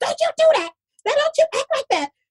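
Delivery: very high-pitched, quick scolding. Retelling how a woman kept telling the speaker off, imitating her real high pitch. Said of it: "She had this real high pitch".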